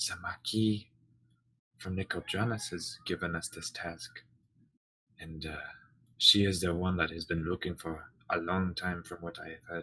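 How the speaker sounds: whispering in a hushed voice. Glancing over to see if the captain is noticing, she says: whispering. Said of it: "She kind of whispers".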